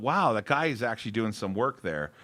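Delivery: ordinary talk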